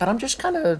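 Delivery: very high voice cracking mid-phrase. Solo commentator talking to viewers, voice cracking. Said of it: "That was a good voice crack".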